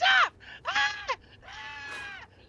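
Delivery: very high, shrill, stretched-out shriek on "ah". Retelling the Pomni plush's panic when pressed: imitated screaming. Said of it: "You screamed and woke her up".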